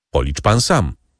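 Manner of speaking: plain reading voice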